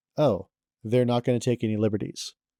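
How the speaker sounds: ordinary talk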